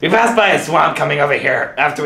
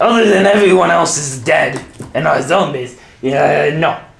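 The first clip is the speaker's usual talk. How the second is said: put-on French accent, drawn-out "no". Answering whether anyone knows what's going on, in a French accent. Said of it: "You're sounding more French".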